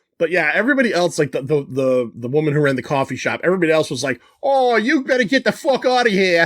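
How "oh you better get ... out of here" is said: put-on full-strength hardcore Massachusetts accent, pitched up. Retelling what the woman who ran the coffee shop said, in a hardcore Massachusetts accent. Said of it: "the hardcore Massachusetts accent".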